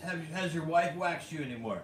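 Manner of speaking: plain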